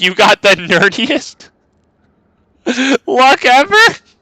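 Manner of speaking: very high, giggling, laughing through the words. Trying again to read the message aloud, laughing while reading. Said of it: "I couldn't even read that with a straight face".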